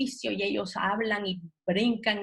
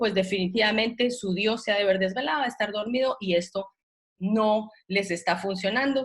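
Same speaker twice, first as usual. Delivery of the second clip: usual speaking voice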